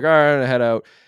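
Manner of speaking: mock slurred drunk speech. Retelling a drunk friend at a party leaving: imitating slurred drunk speech. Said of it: "he was starting to slur his words".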